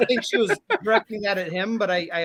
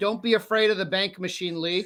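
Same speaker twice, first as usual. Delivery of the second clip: ordinary talk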